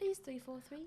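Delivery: put-on British accent. Jokingly begging the game studio 343 for an update, best British voice. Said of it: "in our best British voice".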